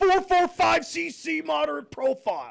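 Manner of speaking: high, scratchy voice. Reading a photo caption like a football play call: Jon Gruden voice. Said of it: "to do this in John Gruden voice".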